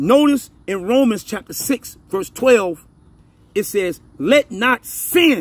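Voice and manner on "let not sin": stressed sin, drawn out slowly. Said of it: "that's in the singular".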